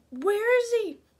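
high, loud, panicked blurted cry.

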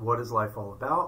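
usual speaking voice

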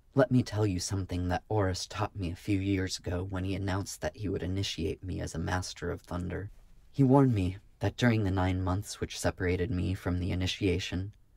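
plain

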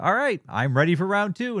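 cheerful, bright, chirpy voice, a bit high-pitched. Recapping a fight, speaker quotes Goku landing in front of Oob, cheerful Goku voice impression. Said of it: "in his cheerful Goku voice".

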